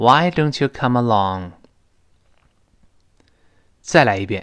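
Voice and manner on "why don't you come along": voice settles down, falling tune on along. A teacher has students read a question aloud; falling intonation at end. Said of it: "最后降调".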